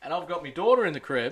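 ordinary talk

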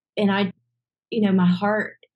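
ordinary talk, nothing marked

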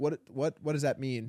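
ordinary talk

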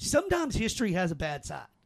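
facetious, tongue-in-cheek, wide-pitched delivery.

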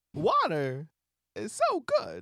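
slow, drawn-out, swooping celebrity cadence. Retrying the line after being asked for more: stronger Christopher Walken impression. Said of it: "I think you got a better Walken in you".

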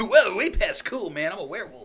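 very loud, high, booming cartoon hero exclamation. Joking about a werewolf game, doing a Sonic impression like Otto. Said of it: "My Sonic impression sounds like Otto from The Simpsons".

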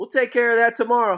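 light, high hollering. Retelling a player yelling from the dugout at a batter heading to first, retelling a yell. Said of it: "he's yelling at him as he's going to first".

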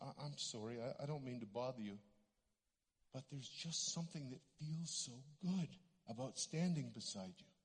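timid, hushed, very soft, shy, low voice. Retelling what a woman said after she came back, imitating her shy voice. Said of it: "and kind of shyly".

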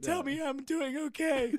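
put-on, full-on panic, high and drawn-out pleading. Retelling a friend begging for reassurance, imitating someone panicking. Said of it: "Just panic mode".

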